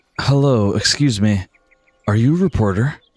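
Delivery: put-on warm, gentle, polite young man's voice. Voicing a young man who stops a reporter: soft, warm voice. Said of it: "you hear a soft and warm voice".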